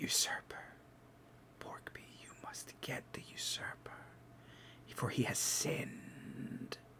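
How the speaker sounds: very quiet, eerie, breathy, shrouded ghostly whisper. Voicing a shrouded specter that appears to the players: whispering specter. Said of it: "just starts, like, whispering".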